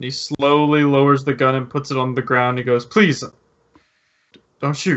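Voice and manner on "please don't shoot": fearful begging. Voicing a gunman who lowers his gun before the players, scared pleading. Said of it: "clearly scared as he's pointing his gun".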